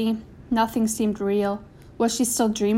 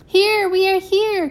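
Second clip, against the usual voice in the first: very high, loud calling out; 9 semitones higher, 5 dB louder than usual. Narrator reading Mama's reply during a house fire, calling out. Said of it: "called Mama".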